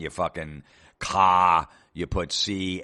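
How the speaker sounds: very slow, loud, drawn-out, exaggerated Boston accent. Complaining about a brand name's pronunciation, demonstrating a Boston accent. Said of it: "if it was like a Boston accent".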